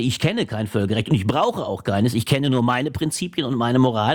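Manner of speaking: plain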